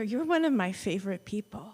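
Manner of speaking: whispered voice. Retelling what was said in a friend's ear at church: retelling a whisper. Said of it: "I'd whisper in her ear".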